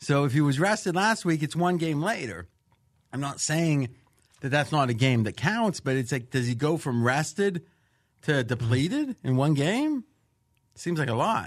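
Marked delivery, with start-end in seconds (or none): 6.3-11.5 openly sarcastic, dry, mock-doubtful tone. Doubting the claim of exhaustion after one game: sarcastic. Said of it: "I'm being sarcastic".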